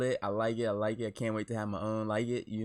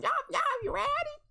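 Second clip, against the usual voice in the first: mocking put-on ratchet voice, higher. Mocking how she just asked if everyone was ready: mimicking her voice. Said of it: "Y'all hear that kinda".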